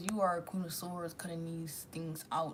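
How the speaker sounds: normal talking voice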